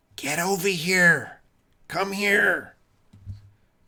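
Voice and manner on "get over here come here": high, loud whisper shout. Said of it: "Kind of whispering, but also shouting".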